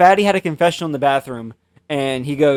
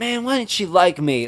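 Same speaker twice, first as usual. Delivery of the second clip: put-on southern US accent; 4 semitones higher, 3 dB quieter than usual. Retelling how he randomly jumped into a southern accent mid-story; southern accent. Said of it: "does a southern accent".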